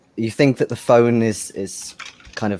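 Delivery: ordinary delivery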